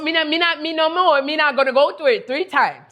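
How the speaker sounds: put-on high, mixed Irish, Trinidadian and Jamaican island accent. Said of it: "that accent came. Part Irish, part Trinidadian, part Jamaican".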